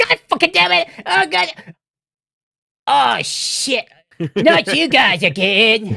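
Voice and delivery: very high-pitched, furious words spat out. Acting out a mad character spitting cuss words at the group: Cartman mock-furious cursing. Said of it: "he's just mad and and just spitting out cuss words".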